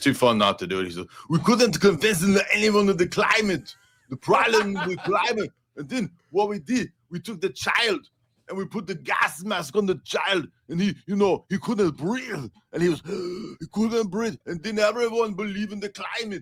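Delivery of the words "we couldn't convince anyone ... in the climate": shoddy, squeaky, very high-pitched put-on voice. Retelling what Arnold says, after asking forgiveness for the voice, shitty Arnold impersonation. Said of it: "impersonation of Arnold".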